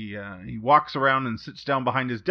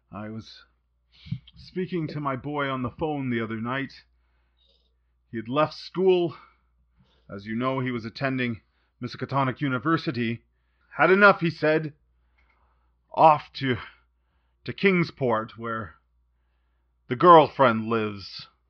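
worried, strained, upset, stressed voice. A father asks for help bringing his son back, upset and stressed. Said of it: "The door opens and a very well-fed and red-faced man enters. He seems upset and stressed. / The door opens and a very well-fed and red-faced man enters. He seems upset and stressed. He's patting his h".

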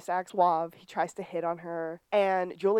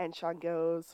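ordinary talk, nothing marked

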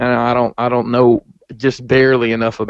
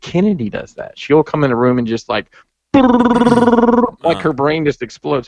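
ordinary talk, nothing marked

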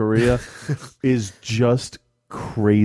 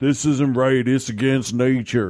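put-on Southern American accent; 3 semitones higher than usual. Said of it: "I don't know why I gave him a Southern accent".

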